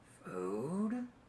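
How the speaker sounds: soft, drawn-out, rough gravelly creature voice. A game master voices something directly above the players, in a gravelly voice. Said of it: "you hear a gravelly voice go".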